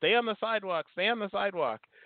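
high put-on yelling.

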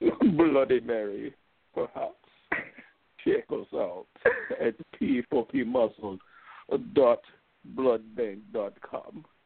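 put-on vampire voice with Jamaican accent. Answering Desiree's cue in a mock commercial, Jamaican vampire voice. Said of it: "You sound like a Jamaican vampire".

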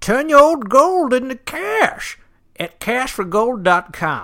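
shrill, very high, very loud prospector holler. Asked to read an ad script in a prospector's voice. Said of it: "In a prospector's voice?".

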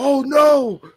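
shrill, very high-pitched, very loud shriek. Retelling people screaming as something smashes into a wall: imitating someone screaming. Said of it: "they're screaming at it".

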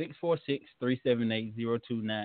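too fast, rushed, rattled-off delivery. Reading a phone number again after being told to slow down, too fast. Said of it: "Too fast".

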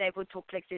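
put-on German accent. Describing their German and Austrian parents, speaker mimics how they talked in a German accent. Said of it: "this is a German accent".

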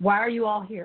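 normal talking voice

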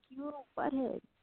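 mock laughing while speaking. Retelling laughing at a man after unleashing on him, retelling a laughing remark. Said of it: "I was laughing like".

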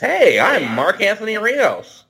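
over-the-top, exaggerated put-on voice, very high.

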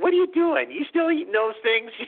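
put-on very high, quick-fire New York accent. Retelling how Julie would look at someone and speak up, in Julie's New York accent. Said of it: "she's going in her New York accent".

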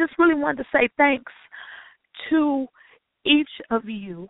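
voice breaking with happy crying. Speaker thanks each viewer for sharing this space, crying happy tears. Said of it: "I know why I'm crying".

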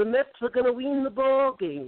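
high-pitched, play-by-play broadcaster-style announcer voice. Retelling a first meeting by imitating the broadcaster Bob Murphy: Bob Murphy impression. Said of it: "you do a pretty good impression of me".

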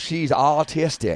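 drawling Southern accent. Showing the other speaker why the word was misheard: Southern drawl. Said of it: "I'm saying with my southern drawl".

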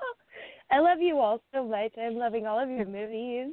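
choked-up, tearful gush, voice catching, close to crying. Speaking to the others about their shorts, choked up, near tears. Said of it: "Don't cry, don't cry".

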